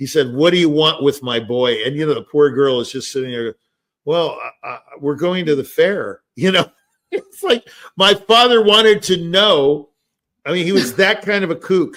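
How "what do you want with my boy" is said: mock-aggressive put-on voice. Recalling his dad questioning the girl who came over, imitating aggressive father. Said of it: "this is how aggressive".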